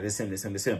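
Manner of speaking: very quiet, barely audible half-whisper. Retelling how a guy pointed someone out: imitating a half-whisper. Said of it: "so the guy whispers".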